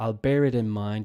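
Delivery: normal talking voice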